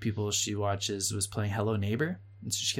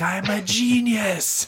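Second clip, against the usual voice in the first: put-on very high, gleeful, excited child's shriek; 11 semitones higher, 10 dB louder than usual. Describing her playing the ghost and catching somebody: imitating a scream. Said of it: "she'd like scream something out like".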